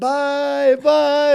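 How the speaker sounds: high little-schoolgirl giggle, drawn-out bye-bye. Retelling waving off the people in the van while filming: imitating giggly schoolgirls. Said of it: "giggling like little schoolgirls".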